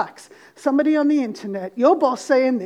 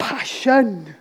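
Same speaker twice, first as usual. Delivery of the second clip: put-on Welsh accent; 3 semitones lower than usual. Speaker says a word the way it would sound in a Welsh accent. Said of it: "If I was going to say this in a Welsh accent".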